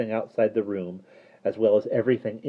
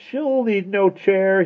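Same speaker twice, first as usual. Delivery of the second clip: very high, slow, melancholy, gloomy throat chuckle; 10 semitones higher, 5 dB louder than usual. A man replies to a helpful suggestion, gloomily chuckling in his throat. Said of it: "gloomily chuckling in his throat".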